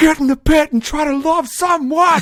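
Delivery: high, very loud screaming at the top of lungs.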